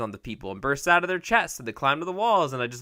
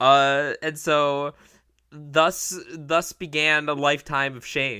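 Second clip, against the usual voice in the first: normal talking voice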